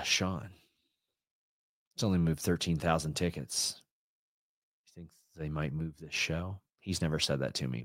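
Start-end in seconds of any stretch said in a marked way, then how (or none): 0.0-6.6 grave, dead-serious delivery in a low voice. Imitating a good friend from the show's community: very serious Ibu voice. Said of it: "But the very serious Ibu voice".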